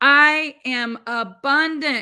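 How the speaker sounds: loud, firm, with conviction. Showing how to say an affirmation: said with conviction. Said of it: "you gotta say it like you mean it".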